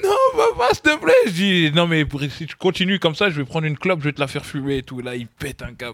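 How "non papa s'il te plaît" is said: put-on shrill, very high, loud sobbing child's pleading voice. Retelling how his son begged him, imitating the child crying. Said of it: "il commence à pleurer".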